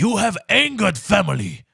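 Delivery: put-on, angry, scolding accent from Asia.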